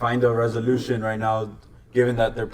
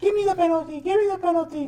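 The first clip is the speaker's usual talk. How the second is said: mock baby whining, higher. Retelling how a player begged for a penalty: imitating whining like a baby. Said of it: "whining like a baby".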